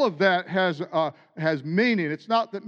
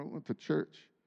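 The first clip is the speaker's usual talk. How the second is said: very quiet, indistinct mumble, nearly whispered; 3 semitones lower, 12 dB quieter than usual. Acting out a weekend small-talk exchange, the answer is mumbled quietly. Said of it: "What did you mumble?".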